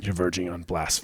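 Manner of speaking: very quiet, hushed, reproachful, barely above a murmur. Performing the line after another speaker asks for an impression: Castiel impression. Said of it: "I can't do a Cass impression. Can you do it?".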